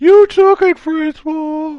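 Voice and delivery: mock yelling. Recalling a game enemy shouting from the hall during a fight, imitating a yell. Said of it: "he's like yelling from the hall".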